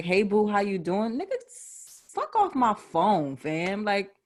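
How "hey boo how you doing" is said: mock nonchalant, casual offhand voice. Retelling how someone who ghosted comes back: imitating a casual ghoster. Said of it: "come back three months later like it's nothing".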